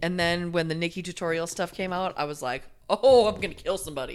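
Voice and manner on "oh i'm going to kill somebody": loud, fed-up, fuming, furious outburst. Retelling own reaction to the Nikki tutorial news: imitating own angry outburst.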